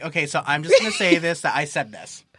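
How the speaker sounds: ordinary delivery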